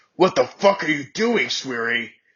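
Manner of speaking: angry growl. Narrator reads a character confronting the narrator for flirting, growling. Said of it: "He growled".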